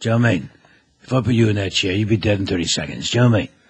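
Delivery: put-on gravelly, fast-talking voice. Showing the fast-talking impression he is known for: Jason Statham impression. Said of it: "do the Jason Statham thing".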